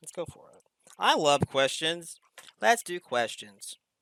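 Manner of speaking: dry, flat delivery that sounds sarcastic. Agreeing to move on to listener questions, dry and sarcastic-sounding. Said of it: "That sounded sarcastic".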